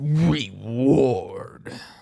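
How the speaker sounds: loud, drawn-out movie announcer, "Reward" stretched long. Asked to say the word again, in movie announcer style. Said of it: "Movie announcer style".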